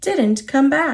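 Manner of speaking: ordinary delivery, nothing marked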